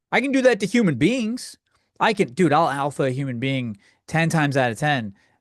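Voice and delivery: ordinary delivery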